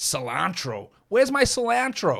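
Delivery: very slow, exaggerated fake American accent. Acting out a cook looking for an ingredient: terrible American accent. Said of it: "That's a terrible accent".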